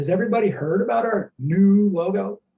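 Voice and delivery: ironic, knowing, sarcastic delivery. Asking everybody a question, then pointing it out: sarcastic. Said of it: "You notice the sarcasm there?".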